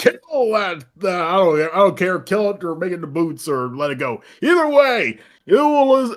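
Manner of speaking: grandiose, self-important shouting. Voicing a self-important figure giving an almighty speech: shouting. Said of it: "as he then starts shouting".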